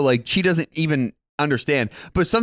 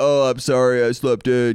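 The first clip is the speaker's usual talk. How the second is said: put-on slow, seductive, sexy voice; 2 semitones lower than usual. Retelling a no-show's apology text to a co-host: imitating Dom's sexy voice. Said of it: "in his, like, sexy voice".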